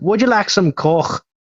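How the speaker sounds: thick, laid-on Scottish or Irish accent, high voice. Showing how it sounds, the speaker asks a question in a thick Scottish or Irish accent. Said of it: "with a thick Scottish or Irish accent".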